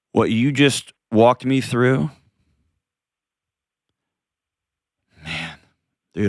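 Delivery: choked-up voice, catching with emotion. A YouTuber on a podcast responds to what the other just walked him through, choked up. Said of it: "I'm getting all choked up".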